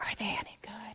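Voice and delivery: hushed, soft, breathy whisper. Speaker recalls their father leaning over at concerts to ask: retelling a father's whisper. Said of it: "he'd say in a whisper".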